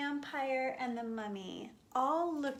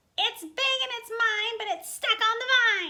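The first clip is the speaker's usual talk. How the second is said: very high, very loud, shrill cackling witch voice; 11 semitones higher, 10 dB louder than usual. Narrator reading a Halloween story, giving the witch's line, cackling witch. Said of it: "cackled the witch".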